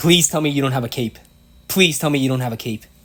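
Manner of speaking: freaked-out pleading. Hoping the opponent has no cape, freaking out. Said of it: "I don't know why I'm freaking out".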